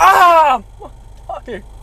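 high, loud scream of pain. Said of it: "scream across the field in pain".

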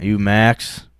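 cold, chilly, unwelcoming, unfriendly tone. Retelling how the ride driver first asked his name: imitating a cold tone. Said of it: "he said it, like, cold".

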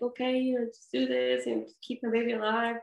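acted-out tearful plea. A parent recalling agreeing to treatment for her baby, retelling tearful pleading. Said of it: "I remember crying, like".

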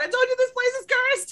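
shrill, very high-pitched yell in character voice. Voicing a character after the front doors slam shut: yelling in character. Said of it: "She just yells out".

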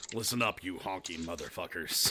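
very deep, low-sunk tough hero delivery.

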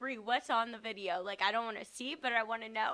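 plain

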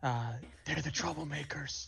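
ordinary delivery

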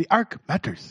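put-on South African accent. Trying out a phrase the way a co-host suggested, in a south african accent. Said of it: "Say it in the South African?".

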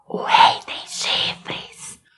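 hushed, very soft, barely audible whisper. Telling the story of the king's secret, the teller says it in a very soft whisper. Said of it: "de forma bem baixinha, sussurrando".

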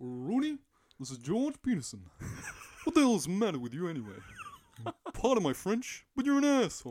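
shrill, very high, loud, booming character voice. Showing off a proud impression when asked, imitated character voice. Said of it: "I can do a very good impression of this voice".

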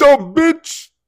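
very loud, high-pitched, shrill shriek. Showing how to use a crude word for impact: screaming. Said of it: "sorry for screaming that in your ear".

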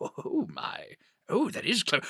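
soft, self-amused murmur with chuckling. After drawing the curtains on his office, the man is heard alone: chuckling to himself. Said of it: "chuckling to himself".

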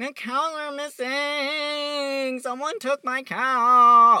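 very high, very loud, very slow whine, stretching out cow. Retelling a myth, the speaker mocks a god storming off to his father: mocking Apollo voice. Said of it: "Rugby does not like me doing that voice".

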